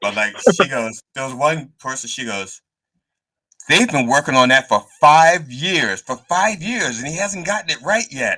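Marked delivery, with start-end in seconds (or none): 3.7-8.4 loud would-be whisper that carries across the room. Retelling his wife's comment at an open mic: imitating wife's too-loud whisper. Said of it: "My wife doesn't whisper very well".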